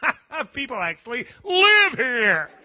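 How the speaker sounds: loud, slow, laughing shout of disbelief. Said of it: "sitting alongside the road laughing".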